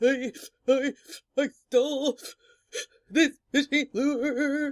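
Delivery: high, loud stuttering sobs, the word lure drawn out. Retelling confessing to the checkout lady, the speaker imitates their own stuttering crying. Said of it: "when you do that crying thing".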